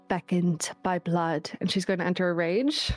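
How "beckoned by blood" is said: quiet mutter under her breath. Voicing a character who enters a rage: muttering under her breath. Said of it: "under her breath, uh, mutter".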